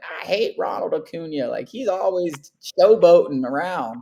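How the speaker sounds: put-on slow, doddering, senile old-man voice. Comparing someone to a late grandpa who griped about a player, imitating senile grandpa. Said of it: "he was like senile".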